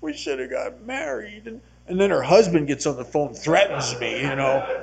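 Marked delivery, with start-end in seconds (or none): 0.0-1.5 half crying, near tears, pitched up. Retelling phoning an ex-girlfriend while lonely, retelling his half-crying. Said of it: "I was kind of half crying".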